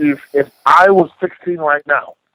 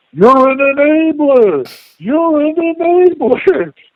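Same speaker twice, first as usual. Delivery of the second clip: put-on, shrill, very high, repeated top-of-lungs screaming; 11 semitones higher, 3 dB louder than usual. Retelling how a drunk man's buddy yelled at the speaker, imitating drunk screaming. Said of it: "starts screaming at the top of his lungs".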